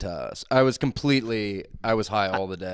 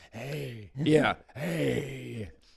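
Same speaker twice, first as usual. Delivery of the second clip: rough, creaky, raspy voice, slow and drawn out; 4 semitones higher, 5 dB quieter than usual. Retelling talking to family while robo-tripping: imitating a slow raspy voice. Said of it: "you're so raspy".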